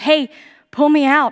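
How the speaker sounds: put-on high, loud, begging, pleading cry. Retelling a vision in which a girl reaches out: retelling a begging plea. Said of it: "And she's begging and pleading".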